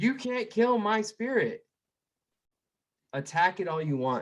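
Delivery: mock shrill, very high-pitched yelling. Retelling a speech about relentless optimism: imitating Dan Pena yelling. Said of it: "yelling on stage".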